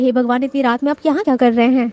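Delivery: ordinary delivery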